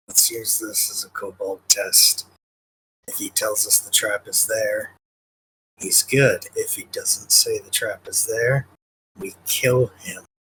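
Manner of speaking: soft, hushed, private whisper. Whispering a plan to a companion in character: whispering to another character. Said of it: "I'm gonna whisper to Drone and say".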